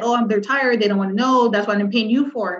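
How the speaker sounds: usual speaking voice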